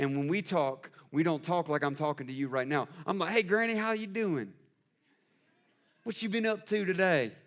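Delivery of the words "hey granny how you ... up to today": put-on Southern American accent, higher pitch. Speaker retells greeting Granny the way they talk together; Southern accent. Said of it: "my southern accent starts coming out".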